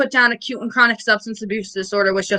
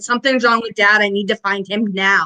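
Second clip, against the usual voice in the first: usual speaking voice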